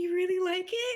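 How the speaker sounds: utterly shocked tone. Voicing a character who watched someone eat something: in utter shock. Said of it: "in utter shock that you, like, ate it".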